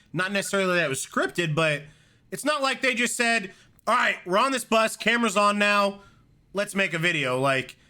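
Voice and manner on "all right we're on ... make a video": plain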